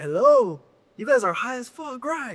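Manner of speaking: very high-pitched, put-on Dutch accent. Retelling a stranger approaching outside a coffee shop, in the man's accent. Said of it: "You're doing the accent with it too".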